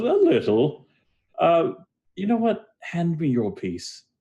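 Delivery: amused chuckle, very high and swooping. Narrating a game scene, the speaker voices a character, chuckling to himself. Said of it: "he kind of chuckles a bit to himself".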